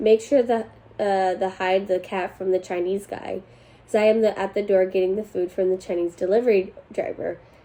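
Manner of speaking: usual speaking voice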